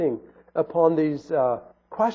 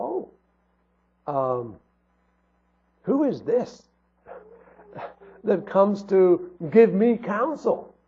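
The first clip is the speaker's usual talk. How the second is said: heavily mocking, very sarcastic tone; 3 semitones higher than usual. Speaker retelling how God challenges Job: retelling a very sarcastic question. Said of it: "in that very sarcastic manner".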